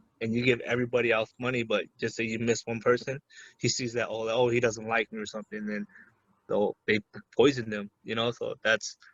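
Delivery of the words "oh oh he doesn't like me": ordinary delivery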